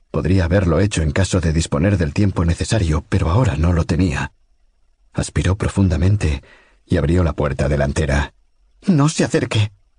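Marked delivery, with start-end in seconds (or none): 8.9-9.7 strident, shrill, hysterical shout, very high-pitched. Opening the front door to an approaching man, a character cries out in a shrill, hysterical shout. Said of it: "le gritó con una entonación más alta de la que había intentado, entre estridente e histérica".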